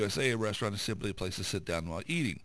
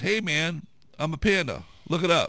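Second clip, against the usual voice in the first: very loud, booming, drawn-out shout; 7 semitones higher, 8 dB louder than usual. Telling a joke, the panda answers the manager back, retelling the panda's yell. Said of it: "The panda yells back at the manager".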